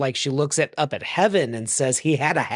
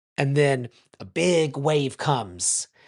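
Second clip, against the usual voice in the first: usual speaking voice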